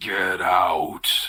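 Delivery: low, throaty, guttural voice. Telling the group what they hear in the game, in a guttural voice. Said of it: "that guttural voice".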